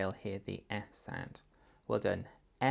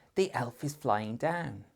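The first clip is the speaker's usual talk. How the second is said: eager, enthusiastic, excited voice; 3 semitones higher than usual. Modeling a practice sentence in different voices, now in an excited voice. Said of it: "Say it in an excited voice".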